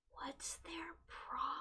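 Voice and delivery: very quiet, hushed whisper. Whispering a question to a party member during a trek: whispering in character. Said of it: "whisper to Cloud and be like".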